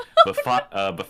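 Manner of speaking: plain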